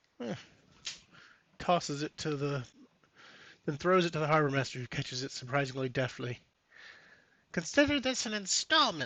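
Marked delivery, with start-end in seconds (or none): 7.5-9.1 pitched-up goblin creature voice. Narrating a story, speaking the goblin's line to the harbor master, in a goblin voice. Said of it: "the goblin says".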